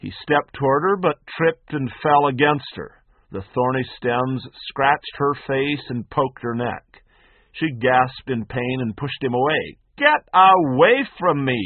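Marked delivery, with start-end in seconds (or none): 10.0-11.7 loud, very slow, drawn-out, swooping shout. A woman pushes away a drunk man who fell against her, shouting. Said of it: "she shouted".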